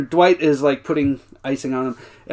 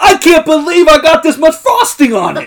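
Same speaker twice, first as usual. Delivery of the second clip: very high-pitched, loud, swooping yell; 12 semitones higher, 8 dB louder than usual. Describing a cake show clip, imitating Buddy Valastro yelling. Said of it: "stares into the camera and yells".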